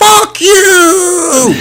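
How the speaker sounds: play-acted very high, loud, drawn-out shriek. Retelling a passing fan screaming from his car window: retelling a stranger's scream. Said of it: "rolls down his window as he passes me and screams".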